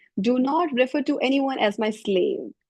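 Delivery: ordinary delivery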